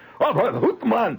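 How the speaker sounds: very high, rowdy, hollered yell. Retelling pub patrons yelling at the TV: imitating Scotsmen yelling. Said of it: "They're yelling things like".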